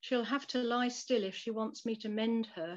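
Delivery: plain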